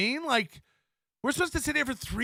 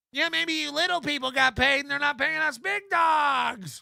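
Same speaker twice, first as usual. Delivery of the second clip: mock nervous screaming, higher pitch; 3 semitones higher than usual. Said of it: "biting your nails screaming".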